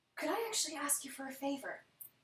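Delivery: quiet, soft, gentle voice. Narrating a scene, a character leans over and speaks to you afterward, quietly. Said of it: "says to you quietly".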